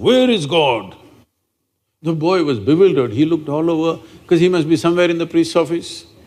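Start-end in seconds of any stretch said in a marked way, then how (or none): 0.0-0.9 big, thundering, booming, resounding voice. Retelling a priest suddenly asking a boy a question: booming voice. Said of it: "with a booming voice he asked".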